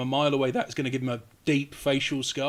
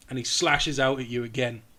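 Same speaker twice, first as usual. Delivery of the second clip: plain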